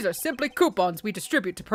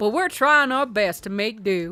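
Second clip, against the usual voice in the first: sudden put-on Southern American accent. A character speaking about the embassy, in a Southern accent. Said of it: "I'm Southern now".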